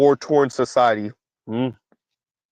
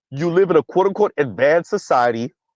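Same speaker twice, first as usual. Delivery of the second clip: normal talking voice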